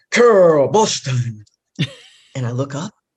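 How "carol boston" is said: big, loud, booming, resounding man's voice. Retelling Barry calling out her name at a breakfast event, imitating Barry's booming voice. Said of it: "this man with this booming voice".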